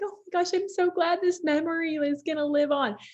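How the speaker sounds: play-acted, very high-pitched weepy crying voice. Retelling how mom reacted to a memory in the book: imitating mom crying. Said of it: "my mom was, like, crying".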